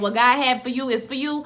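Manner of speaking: ordinary talk, nothing marked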